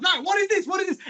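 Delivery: mock frantic panicked outburst, high and rushed. Retelling a film's opening, a man delivering a baby in a cab, acting out freaking out. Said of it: "he starts freaking out".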